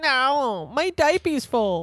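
put-on squeaky, very high-pitched little kid voice. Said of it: "the people you kill usually have the little kid voices".

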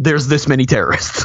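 ordinary talk

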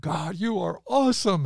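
very high, cried-out, crying exclamation. A dad recalling praising God while driving in a deluge, retelling a scream. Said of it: "I was screaming".

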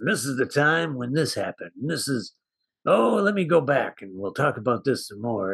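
rough whiskey-and-cigarettes narrator voice, boozy and smoky. Imitating the movie's narrator while listing the cast: imitating a whiskey-and-cigarettes voice. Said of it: "like a guy who's had too much whiskey and too many cigarettes".

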